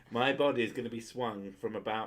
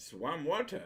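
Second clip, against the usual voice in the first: put-on Dutch accent, pitched up; 7 semitones higher than usual. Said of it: "you sounded like a Dutch guy".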